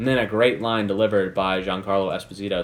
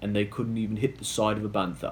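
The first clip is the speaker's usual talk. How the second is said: soft, terrible, bad put-on English accent; 6 dB quieter than usual. Recapping a scene, quoting a joke about stormtroopers: terrible English accent. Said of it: "I know that's terrible English accent".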